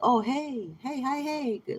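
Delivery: slow creepy sweet-talking tone. Acting out how such people come back and greet you: imitating a creepy predatory greeting. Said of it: "That's like this weird".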